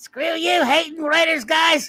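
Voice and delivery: very high-pitched, loud cartoon-style voice. Reading out a quoted line, in an Eric Cartman voice. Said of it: "in an Eric Cartman voice".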